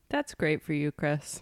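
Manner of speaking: hushed, soft voice that sounds sarcastic. Responding to someone talking about tequila, sounding sarcastic. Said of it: "That sounded really sarcastic".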